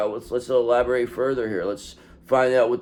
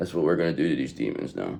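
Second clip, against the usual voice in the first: ordinary talk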